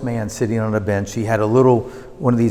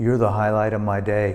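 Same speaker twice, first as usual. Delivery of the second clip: flat, dead-level, unvaried monotone delivery. Acting out a man who turned his head to speak, in a flat monotone. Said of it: "Very monotone like that".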